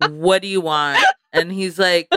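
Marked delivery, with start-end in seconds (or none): 0.0-1.0 put-on angry voice. Retelling own first answer to a boyfriend's message: imitating own angry reply. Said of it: "I was very, like, angry".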